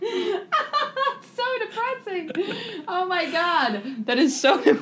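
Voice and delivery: very high, words broken up by laughter. Reacting to another speaker almost going to prison, laughing while talking. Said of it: "I don't know why I'm laughing so hard".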